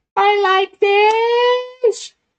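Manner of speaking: squeaky, very high voice, stretched out. Asked how the Goblin voice sounded, the speaker shows it: super high-pitched Goblin voice. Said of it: "with a super high pitch like this".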